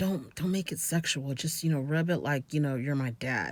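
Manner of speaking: put-on low mutter. Retelling what she said to him under her breath: imitating someone muttering under breath. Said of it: "she mutters under her breath to him".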